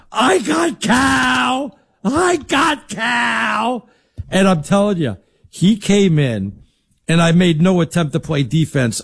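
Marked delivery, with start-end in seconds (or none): 0.2-3.9 high, slow, drawn-out echoing yell. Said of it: "I yell, I yell".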